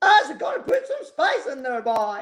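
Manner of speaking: bad put-on Jamaican accent, high and swooping. Quoting an amazing foodie lady with Caribbean roots, in a bad Jamaican accent. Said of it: "my accent's not very good".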